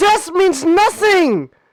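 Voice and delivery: dramatic, high, slow, loud, booming, grand proclamation tone.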